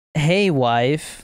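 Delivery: ordinary talk, nothing marked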